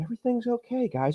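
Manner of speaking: soft, very high-pitched voice. Imitating an official from a Maricopa hearing: imitating Bill Gates' soft voice. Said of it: "he's got that real soft voice".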